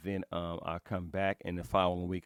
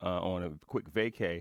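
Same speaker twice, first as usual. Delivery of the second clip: normal talking voice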